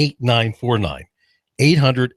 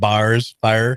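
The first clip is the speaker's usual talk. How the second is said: put-on Midwestern accent. Teasing a Midwesterner who says they have no accent, in a mock Midwestern accent. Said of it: "All you Midwesterners don't think you have an accent. You all go up and you go bars and fire".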